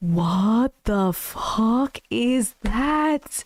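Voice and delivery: play-acted, very slow, trembling, quavering rise in pitch. Retelling what he said when he stopped mid-word, voice trembling and getting louder. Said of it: "His voice kind of trembled and got louder".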